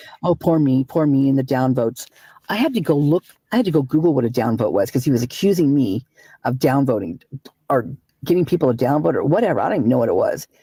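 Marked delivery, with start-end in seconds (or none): none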